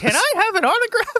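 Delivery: tiny, very high-pitched fake little voice. Retelling how a big man asks Hogan for an autograph, in a fake little voice. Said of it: "in his fake little voice".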